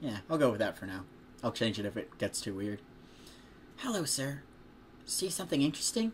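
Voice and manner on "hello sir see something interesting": put-on soft, gentle girl's voice, much higher. Narrator reading a story where a girl addresses a man at her stall, soft girl's voice. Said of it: "So she has a soft voice".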